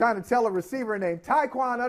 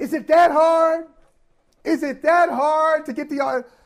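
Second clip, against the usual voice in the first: angry yell, higher and louder; 7 semitones higher, 6 dB louder than usual. Retelling Tom Brady yelling at a player in front of everybody: imitating Tom Brady yelling. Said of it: "yelling at him".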